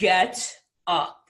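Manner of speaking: voice dropped deep, insistent tone. Retelling how Les Brown got you off the sofa, in a deep Les Brown voice. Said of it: "in his deep Les Brown voice".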